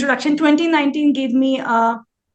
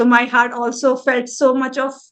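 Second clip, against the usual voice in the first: ordinary delivery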